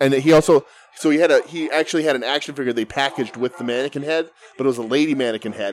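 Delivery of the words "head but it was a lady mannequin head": ordinary talk, nothing marked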